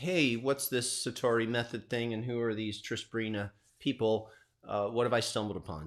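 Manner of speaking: ordinary delivery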